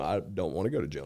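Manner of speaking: plain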